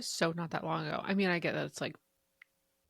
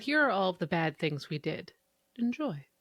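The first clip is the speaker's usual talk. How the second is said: ordinary talk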